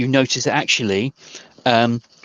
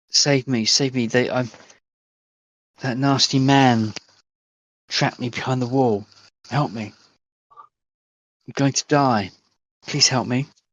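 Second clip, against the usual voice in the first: desperate, begging voice. Voicing a trapped voice behind a wall: trapped victim calling for help. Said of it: "you hear a voice, um, that y-, is saying".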